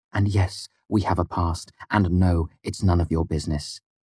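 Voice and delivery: ordinary talk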